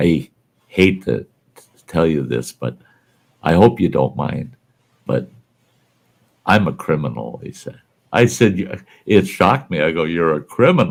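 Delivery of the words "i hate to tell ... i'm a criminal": mock whispering. Retelling what a man whispered after leaning over to them, retelling a whisper. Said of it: "it whispers to me".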